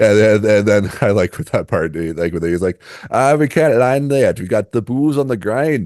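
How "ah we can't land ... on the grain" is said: bad, high-pitched fake Irish accent. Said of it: "the bad Irish accent".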